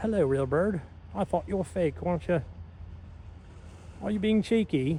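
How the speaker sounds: put-on Australian accent, best attempt. Speaker talks to a bird they thought was fake, in a put-on Australian accent. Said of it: "that was my best Australian voice".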